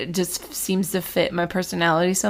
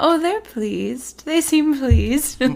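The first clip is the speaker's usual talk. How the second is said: light, airy, floating voice, pitched up high; 8 semitones higher than usual. Imagining Luna whispering in Harry's ear, airy Luna voice. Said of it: "her like airy voices being like".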